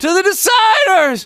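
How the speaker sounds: pushed very high, strained, on the edge of breaking. Voice exercise pushing into a vulnerable high range: pushed high, near cracking. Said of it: "I am pushing up to a very vulnerable part of my voice".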